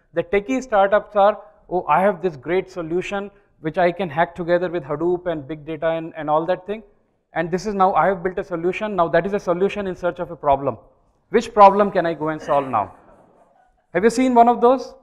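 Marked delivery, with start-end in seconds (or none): none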